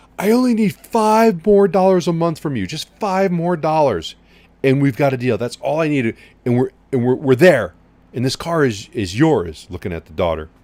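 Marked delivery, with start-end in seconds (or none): 0.2-9.7 put-on high-pitched, loud hollering. Retelling a car sale, the manager behind glass: imitating a manager yelling. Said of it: "he's yelling through the, through the glass".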